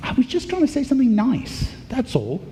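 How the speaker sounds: high, exasperated protest. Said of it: "And you're like".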